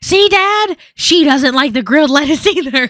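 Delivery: high, loud, gleeful teasing.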